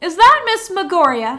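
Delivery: swaggering voice shouting with a smile. Voicing Nadia shouting a greeting to Marlowe across the docks: Nadia shouting with a smile and swagger. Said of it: "shouts out with a, a bit of a smile and a swagger".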